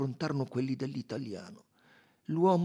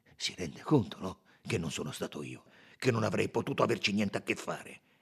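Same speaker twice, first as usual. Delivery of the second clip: ordinary delivery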